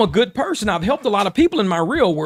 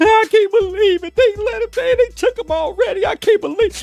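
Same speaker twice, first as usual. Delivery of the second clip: mock tearful sobbing, higher pitch; 12 semitones higher than usual. Mocking people who cry about a loss on camera: imitating tearful sobbing. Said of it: "I've seen motherfuckers tears rolling".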